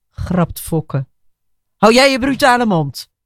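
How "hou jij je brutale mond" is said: biting, high, furious snap, cut off abruptly. Reading a story aloud, a furious woman snaps at the man who just joked. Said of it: "snauwt Annegien".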